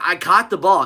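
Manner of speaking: put-on pleading tone. Retelling what a wide receiver says after a catch: imitating a pleading receiver. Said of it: "Wide receiver pleading".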